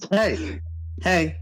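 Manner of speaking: startled call-out in a very high voice. Voicing a character doing a double take, calling out. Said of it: "do a full-on double take and go".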